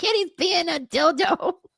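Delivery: very high-pitched, drawn-out character voice. Quoting a cartoon scene with a friend: Cartman voice. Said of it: "It's like".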